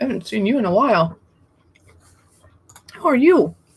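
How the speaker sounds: talking with mouth full of food. Greeting a viewer in the chat, talking with food in mouth. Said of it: "I have food in my mouth".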